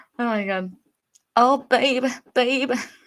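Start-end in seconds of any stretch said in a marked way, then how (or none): 1.4-2.7 loud, fake babyish put-on baby voice. Attempting to imitate a woman's voice, in a baby voice. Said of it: "I can't do the baby voice".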